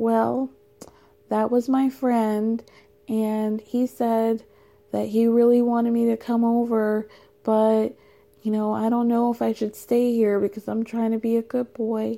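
put-on innocent tone. Retelling what he told Yara after hanging up: imitating an innocent tone. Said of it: "innocently looks at Yara and is like".

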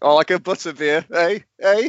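dopey, slow-witted delivery. A speaker shows how he wishes he had played the part: playing dim-witted. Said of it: "just kind of dim and be like".

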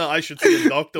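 ordinary delivery

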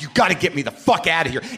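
mock-furious, acted-out angry tone. Retelling calling the people in charge of him, acting out a furious demand. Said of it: "So I'm furious".

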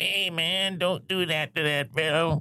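very slow, high, drawling bar derelict voice. Imitating a derelict from Terminator who shouts at the Terminator: impression of a bar derelict. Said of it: "oh my God, that impression".

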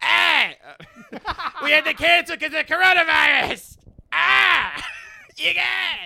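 very high, slow, drawn-out, crawling stand-up comedian rant. Joking with friends about a cancelled event: Sam Kinison impression. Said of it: "you're doing, like, a Sam Kinison".

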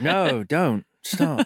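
mumbled, muttered, half-hearted, lazy delivery. Joking about a film character's weak warnings: mumbled half-hearted warning. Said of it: "trails off or just mumbles it under his breath".

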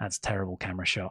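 muttered under the breath. Recounting what a producer said backstage while watching, retelling a mutter under breath. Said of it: "under his breath".

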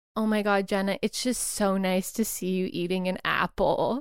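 mock condescending voice. Retelling what a woman said on seeing her eat an apple, mocking a condescending voice. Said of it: "in the most condescending voice".

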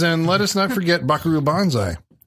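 plain

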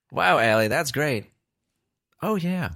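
high phone assistant voice. Joking about the movie with AI voice added: Siri voice. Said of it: "Just like a Siri voice".

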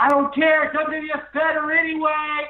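put-on very high, very slow, drawn-out yell. Retelling how a brother shouted at wrestlers in a concourse: imitating brother's shout. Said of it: "I just screamed that in my apartment".

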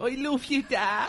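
very high, slow, tearful, sobbing Irish accent. As if you're a grown son choking up at a parent's memory, voice cracking in an exaggerated Irish lilt, played for laughs. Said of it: "start crying in an Irish accent going".

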